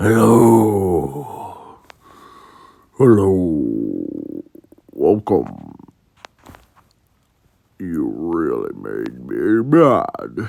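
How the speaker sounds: dark, very deep, drawn-out voice. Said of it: "Zuko's voice was dark and deep".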